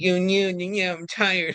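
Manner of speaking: flat, spent, worn-out, exhausted delivery. Imitating a fighter worn out after chasing the finish: imitating tired Topuria. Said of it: "he seemed tired".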